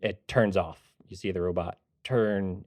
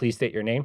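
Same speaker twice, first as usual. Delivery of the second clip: mechanical robotic voice; 3 semitones higher than usual. Voicing a front-desk robot asking a new hire's name: robot voice. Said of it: "the robot springs to life almost, looks at you".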